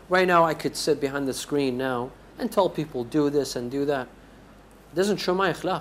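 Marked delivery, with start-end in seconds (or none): none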